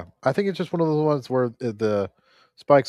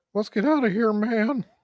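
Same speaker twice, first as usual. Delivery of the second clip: pitched-way-up goofy slacker voice; 10 semitones higher than usual. Gamer getting away in a game, saying a line as a Shaggy impression. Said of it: "that was a pretty bad Shaggy impression".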